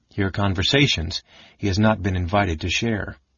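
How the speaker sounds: ordinary delivery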